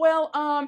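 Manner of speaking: put-on stuttering speech. Retelling how someone could not answer a question: imitating someone stuttering. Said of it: "She's stuttering and she's like".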